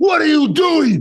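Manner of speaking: very high-pitched, stressed, shrill yelling. A parent retells yelling at their toddler son over overflowing cereal, retelling a yell. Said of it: "And I'm yelling".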